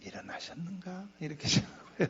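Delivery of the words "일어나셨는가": much softer, hushed, low, quiet voice. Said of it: "나처럼 이렇게 소리도 안 질러요, 이렇게".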